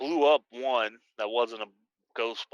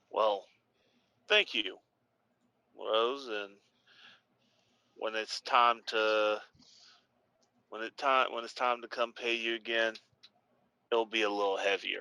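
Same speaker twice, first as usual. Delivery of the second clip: hushed, whispered, quiet voice. Speaking in character to a contact after a payment: whispering. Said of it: "And I say that whispering to him".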